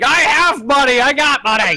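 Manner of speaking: high, full-on, drawn-out scream. Recounting a tabletop game scene, the speaker voices Artlock: Artlock screaming. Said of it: "Then you just hear Artlock screaming".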